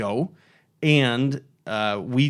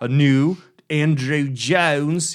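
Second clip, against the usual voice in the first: very slow, drawn-out put-on British accent; 3 semitones higher, 3 dB louder than usual. Listing new budget speaker lines and naming the designer: Andrew Jones impression. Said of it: "Sorry I did that impression".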